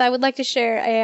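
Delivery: ordinary talk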